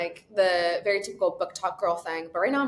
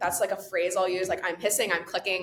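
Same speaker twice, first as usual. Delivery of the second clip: ordinary talk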